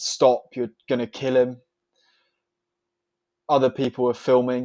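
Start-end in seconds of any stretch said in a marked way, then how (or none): none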